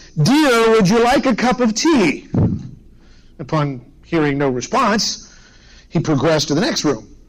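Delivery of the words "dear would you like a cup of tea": mock, loud, pitched-up calling voice. Telling a story, acting out a husband offering his reading wife tea: retelling a loud call. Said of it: "he said in a loud voice".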